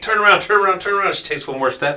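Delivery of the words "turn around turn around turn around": several voices yelling loudly. Retelling watching her wade in, the speaker acts out everyone yelling at her: retelling the group yelling. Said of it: "we're yelling at her".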